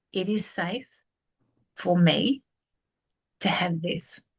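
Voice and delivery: very slow, halting delivery broken by pauses. Repeating an affirmation when asked to say it again: said very slowly. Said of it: "even slower".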